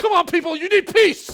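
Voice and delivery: angry, very loud, shrill, high-pitched tone. Showing how a message about peace sounds when preached angrily: angry delivery. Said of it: "I'm saying it in an angry way".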